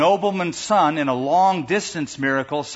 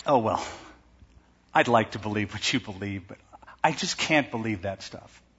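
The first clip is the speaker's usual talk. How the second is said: mock-condescending, lower pitch and quieter; 6 semitones lower, 7 dB quieter than usual. Mimicking how unbelievers answer the speaker, mocking a condescending tone. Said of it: "And the way they say it, it almost sounds like, they're just a little too smart".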